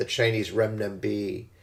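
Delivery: ordinary talk, nothing marked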